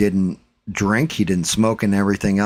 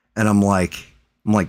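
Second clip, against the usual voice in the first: normal talking voice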